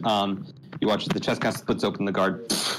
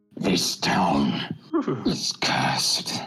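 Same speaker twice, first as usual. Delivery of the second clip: put-on gurgling creature voice. A game master voices a bleeding creature trying to speak; gurgling voice. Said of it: "this kind of voice gurgles out from it".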